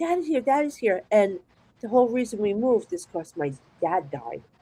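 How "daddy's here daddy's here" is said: mock child voice, high, screaming cry. Retelling being a little kid seeing father at the bed: imitating own childhood screaming. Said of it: "And I'm screaming".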